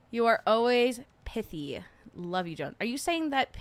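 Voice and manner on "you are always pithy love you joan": ordinary talk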